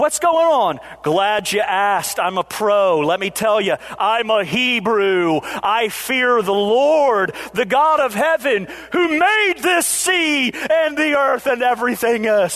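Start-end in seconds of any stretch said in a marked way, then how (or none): 1.0-12.6 preacher style, slow and deliberate. Retelling Jonah's story, the speaker acts out Jonah going into preacher mode. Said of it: "Jonah goes into preacher mode here".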